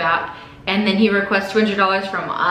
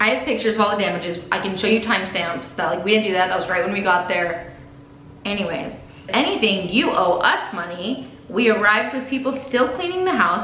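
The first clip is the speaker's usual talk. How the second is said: normal talking voice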